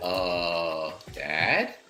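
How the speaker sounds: put-on timid, hesitant, soft, sheepish teenage voice, drawn-out "uh". Playing a character who creeps out toward his dad: sheepish, like a teenager. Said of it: "sheepishly like a teenager would".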